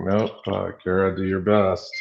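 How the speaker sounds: usual speaking voice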